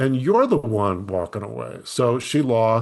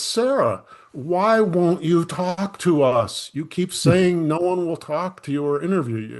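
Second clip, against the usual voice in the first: mock raised, pitched-up call, not nasty; 6 semitones higher than usual. Retelling calling out to a woman hurrying to her car, retelling a raised voice. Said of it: "but I did raise my voice".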